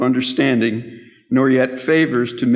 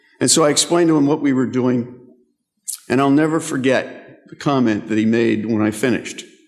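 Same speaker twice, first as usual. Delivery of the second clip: usual speaking voice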